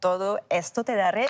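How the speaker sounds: said in a full, real Spanish accent. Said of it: "je vais le dire avec l'accent".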